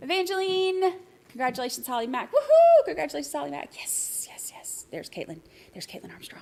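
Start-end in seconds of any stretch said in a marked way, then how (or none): 3.8-6.4 very soft, hushed, barely voiced whisper. Pointing out someone who just showed up: whispering. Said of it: "I don't know why I'm whispering".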